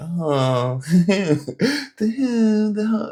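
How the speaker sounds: put-on high-pitched babyish girly voice. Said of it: "like, babyish voice that some females do".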